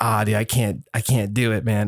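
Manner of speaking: ordinary delivery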